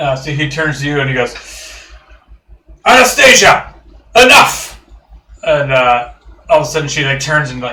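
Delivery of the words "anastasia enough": very high-pitched, shrill, loud yell. Storyteller voicing a character mid-scene, yelling. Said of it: "Sounds like me when I yell".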